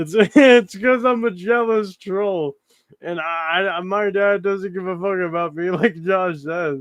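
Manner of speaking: laughing through the words. Reading a post about someone and laughing while talking. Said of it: "this is making me laugh".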